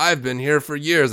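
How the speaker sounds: mock condescending hard-man voice. Speaker retells arguing with a man over parking fees, in mock tough-guy condescension. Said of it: "using this like condescending language, trying to sound like a tough guy".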